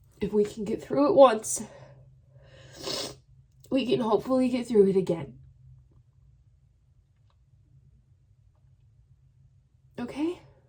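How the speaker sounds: crying while talking. A vlogger speaking to her channel's viewers, crying while talking. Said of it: "in case you see me crying".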